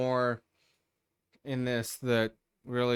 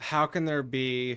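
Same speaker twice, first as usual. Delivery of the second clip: ordinary talk, nothing marked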